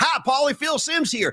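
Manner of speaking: very high-pitched voice, hello pitched way up. Retelling a Cameo video message sent to the speaker: imitating Phil Simms. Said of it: "he was like".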